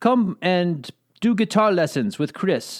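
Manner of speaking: horrible put-on Dutch accent. Retelling how a Dutch lieutenant colonel office mate kept pestering them, in a bad Dutch accent. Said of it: "that was a horrible i- impression of a Dutch accent".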